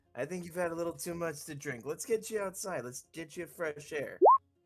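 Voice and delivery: over-the-top delivery. Acting out silencing a drunk buddy and getting him outside, exaggeratedly speaking up. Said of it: "I'm gonna like exaggeratedly like speak up".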